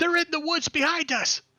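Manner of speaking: shouting. A game master voices a commoner warning the group, shouting out a warning. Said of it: "shouts out".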